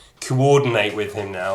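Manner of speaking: ordinary talk, nothing marked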